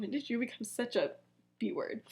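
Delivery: put-on muttering. Retelling how Severus mutters as he leaves: imitating muttering under breath. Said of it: "under his breath".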